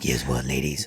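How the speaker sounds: very low, soft, deep bass voice. Speaker demonstrates a bassy voice that jumps in, in deep bassy voice. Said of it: "by that bassy voice that just jumps in".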